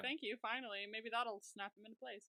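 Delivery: ordinary talk, nothing marked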